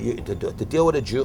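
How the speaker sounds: plain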